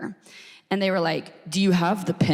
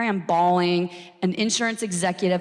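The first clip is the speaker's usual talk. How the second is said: ordinary talk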